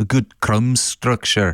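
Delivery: attempted Scottish accent. Podcast co-host repeating a baking judge's phrase, attempted Scottish accent. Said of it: "I'm going to do it in a Scottish accent".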